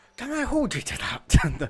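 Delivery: put-on sarcastic Scottish accent. Playing a character doubting a teammate's promise: sarcastic Scottish accent. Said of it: "Craggs went Scottish when he's been sarcastic".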